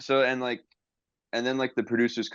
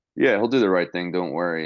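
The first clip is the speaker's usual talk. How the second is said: ordinary talk, nothing marked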